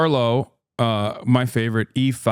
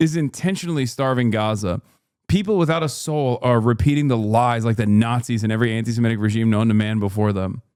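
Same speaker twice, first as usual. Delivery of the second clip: usual speaking voice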